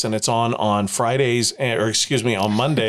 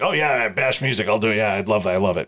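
mock voiceover announcer voice. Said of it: "you just sounded like him".

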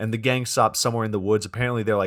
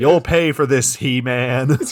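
screaming, louder and higher pitch; 3 semitones higher, 6 dB louder than usual. Retelling a scene where Paul Bunyan picks up an ox skull: acting out Paul Bunyan's scream. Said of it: "Paul Bunyan picks up the ox skull and screams".

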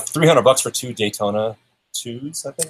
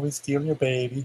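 comic, put-on, exaggerated Swedish accent; 2 semitones higher, 7 dB quieter than usual. Imitating a movie villain's accent, like the Swedish chef: Vigo voice. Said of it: "kinda like that Swedish chef kind of".

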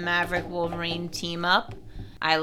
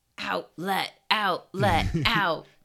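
slow, silly, drawn-out backwards talk with broken words. Imitating the collared Wolverine clones: silly Wolverine clone Yoda talk. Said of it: "their silly little Yoda talk".

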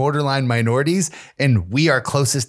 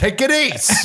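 put-on heavy, brutal Italian accent pitched way up; 11 semitones higher than usual. Speaker imitates the listener's dad walking through the door: put-on heavy Italian accent. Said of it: "He's like".

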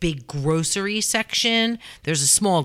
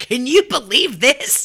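put-on frantic ranting outburst, higher pitch and louder; 8 semitones higher, 4 dB louder than usual. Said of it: "became, like, that lunatic".

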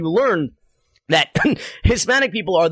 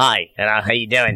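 put-on Melbourne-style Australian accent, low voice; 9 semitones lower than usual. Mimicking how another man talks, greeting him, in an australian accent. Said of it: "you're doing an accent from an Australian".

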